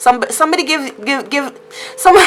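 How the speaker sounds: tangled stammer, stuttering and repeating words. Explaining to listeners a tempting new job offer, stuttering. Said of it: "I'm so sorry for stuttering".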